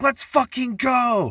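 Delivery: very high, whooping, excited American-style celebration yell. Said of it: "I just had the American in me".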